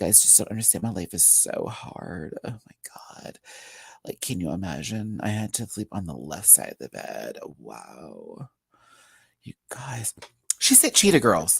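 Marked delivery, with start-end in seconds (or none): 0.0-7.4 creaky, breathy, soft, rushed vocal fry. Showing how she wants her to talk the entire time, in vocal fry. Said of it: "I need her to talk in a vocal fry".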